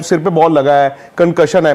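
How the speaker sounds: mock sentimental tone.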